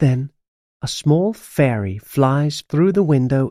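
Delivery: plain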